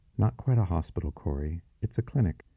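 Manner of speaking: ordinary delivery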